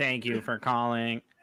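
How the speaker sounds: fake synthesized speech voice. Doing the requested voice for the others: Stephen Hawking voice. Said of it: "do that with the Hawkins voice".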